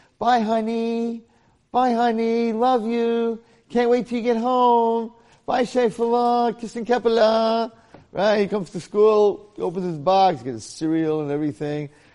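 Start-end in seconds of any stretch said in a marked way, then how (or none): 0.2-7.7 high, slow lovey-dovey coo. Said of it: "she's all lovey-dovey with her husband".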